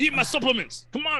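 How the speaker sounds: wild, very high-pitched shouting, all over the place. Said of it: "why are you yelling so much?".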